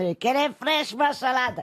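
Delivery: put-on Spanish accent. Recalling his grandfather, a fruit and vegetable seller, speaker imitates his Spanish accent. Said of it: "sauf qu'il avait l'accent espagnol".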